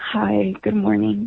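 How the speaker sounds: sad-sounding tone. A caller greeting the show's host on the line, in a sad voice. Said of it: "You sound sad".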